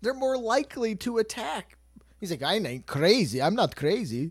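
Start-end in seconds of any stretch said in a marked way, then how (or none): 2.4-4.3 slow, drawn-out, put-on Scandinavian accent. Acting out a man's reply in a story, in a put-on Scandinavian accent. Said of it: "I gave him a like, Scandinavian accent".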